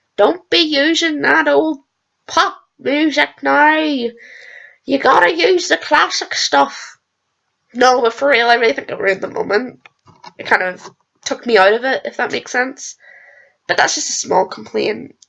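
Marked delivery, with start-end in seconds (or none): 0.2-7.0 put-on slow, drawn-out elderly granny voice. Speaker lecturing about using classic music, in an old grandma voice. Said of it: "I sound like an old grandma".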